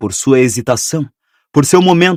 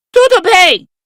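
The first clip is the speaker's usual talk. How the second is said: put-on squeaky voice, higher; 3 dB louder than usual. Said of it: "uma imitação razoável da voz chiada de Rabicho".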